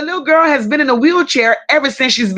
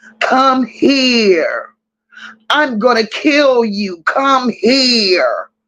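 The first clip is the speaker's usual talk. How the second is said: devilish demonic voice, drawn out. Retelling how a woman flicking the lights called them over, imitating a demon-like voice. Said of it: "Sounding like a goddamn demon".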